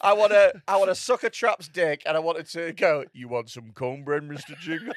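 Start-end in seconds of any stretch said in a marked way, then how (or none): 3.1-4.9 put-on gentle giant voice, lower and quieter. Joking about wanting to sound like John Coffey in Green Mile. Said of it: "I want my dick to sound like John Coffey in Green Mile".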